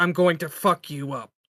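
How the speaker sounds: rough, deep, gravel-voiced, menacing tone. Playing a game, voicing his character charging at a creature, in a deep gravelly voice. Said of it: "deep gravelly voice".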